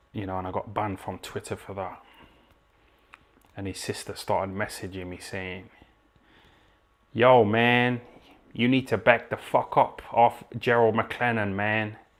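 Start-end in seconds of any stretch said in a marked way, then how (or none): 7.1-11.9 brash, very loud, slow put-on American accent. Retelling the sister's messages, the speaker quotes her in an american accent. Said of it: "talking in a fucking American accent".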